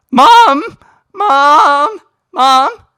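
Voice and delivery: loud, high voice, cracking on "Mom". Showing viewers the voice cracks they can tag in the comments: voice cracking. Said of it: "there's some voice cracks".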